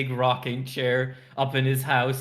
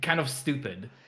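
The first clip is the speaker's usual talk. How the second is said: ordinary talk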